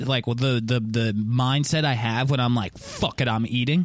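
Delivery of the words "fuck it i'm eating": ordinary talk, nothing marked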